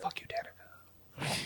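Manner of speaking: hushed whisper, barely voiced, very soft. During a game narration, a player whispers to Danica; whispering. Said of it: "I'm just whispering".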